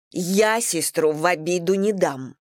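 menacing, threatening tone. Anna speaks to Igor about her sister, threatening. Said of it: "угрожающе заговорила Анна".

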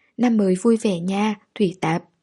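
ordinary delivery, nothing marked

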